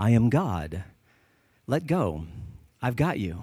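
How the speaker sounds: gentle, calmly authoritative, low-pitched, slow voice. Telling a story of a man screaming for help, voicing God, gentle but authoritative. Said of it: "the gentle but authoritative voice says".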